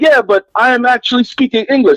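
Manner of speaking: put-on Jamaican accent, pitched high. Retelling a conversation with a Jamaican man, imitating a Jamaican accent. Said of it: "listening to this Jamaican dude one time".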